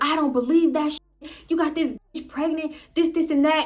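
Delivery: put-on shouting. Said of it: "I'm yelling at the top of my lungs".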